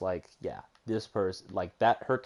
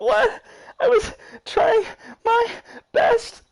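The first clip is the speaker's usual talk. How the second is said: very high, loud, tearful sobbing; 10 dB louder than usual. Retelling how a scared young girl reacted after being blamed, mimicking someone crying. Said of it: "the girl's just like crying".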